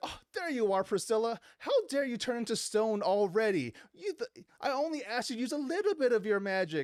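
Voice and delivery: put-on high-pitched, whiny little girl voice. Speaker retelling a story scene, voicing the little girl Lizette, imitating whiny Lizette. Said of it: "And she's like very whiny".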